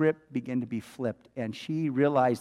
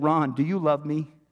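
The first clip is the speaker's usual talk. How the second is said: frantic, sobbing delivery; 3 dB louder than usual. Retelling a mother's question to her son: retelling a frantic sobbing plea. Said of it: "she's frantic and she's sobbing".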